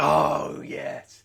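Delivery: gritty manly voice. Reacting to a game moment just brought up: gritty masculine voice. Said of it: "listen to what happened to my voice there".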